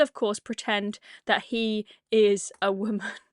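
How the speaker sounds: ordinary talk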